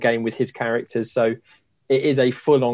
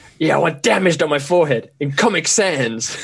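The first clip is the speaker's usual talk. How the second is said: pitched-up, try-hard edgy voice, a touch higher; 5 semitones higher than usual. Retelling an animated video of the Joker getting tattoos: imitating the Joker. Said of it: "And the guy's going".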